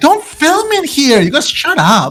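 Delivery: very high, swooping, shrieking scream. Voicing a girl in a bathroom as a stranger walks in: screaming. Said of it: "you hear a girl scream".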